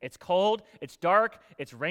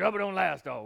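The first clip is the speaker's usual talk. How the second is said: put-on old, deep, gruff voice with Louisiana accent. Retelling what an old louisiana man said to the speaker, gruff deep louisiana voice. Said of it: "this old, gruff, deep Louisiana voice".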